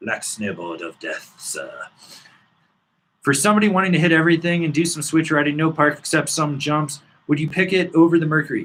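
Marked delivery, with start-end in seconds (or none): 0.0-1.7 very low, soft put-on old English accent. Reading out a question, the speaker says the product name in an old english accent. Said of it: "You have to say it with a with with an old English accent".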